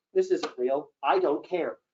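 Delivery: normal talking voice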